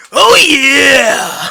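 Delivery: very loud wrestler-style bellow, long drawn-out yeah. Showing a Macho Man impression. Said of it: "my Macho Man's, like, more like".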